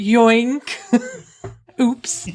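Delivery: put-on upper-class English posh accent. Joking with others about what they'd do if someone got in, in a posh accent. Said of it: "yoink! In a posh accent".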